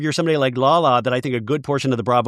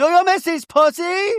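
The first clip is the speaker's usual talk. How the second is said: very high-pitched voice. Retelling a reunion line from Real Housewives of Miami: Adriana impression. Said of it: "that's my great imitation of Adriana".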